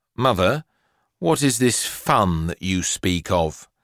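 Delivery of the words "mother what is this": ordinary delivery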